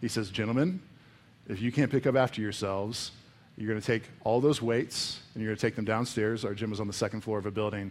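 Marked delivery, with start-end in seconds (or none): 0.3-6.4 mock calm, terrifying, menacing voice. Retelling a man addressing the gym's lifters about their mess: retelling a calm, terrifying voice. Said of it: "in the most calm and terrifying voice".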